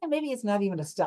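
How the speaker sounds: plain reading voice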